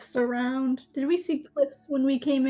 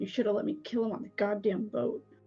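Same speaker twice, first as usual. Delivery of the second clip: quiet muttering under breath; 5 semitones lower, 7 dB quieter than usual. Speaking in character to Lily about a prisoner: muttering under breath. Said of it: "I'm gonna mutter to Lily under my breath".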